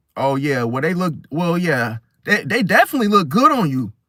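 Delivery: grudging, halting, insincere tone with a sting. Acting out a backhanded compliment on someone's shoes: imitating a backhanded compliment. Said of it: "And then the backhandedness comes like".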